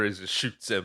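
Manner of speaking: usual speaking voice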